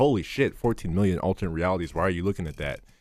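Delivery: ordinary talk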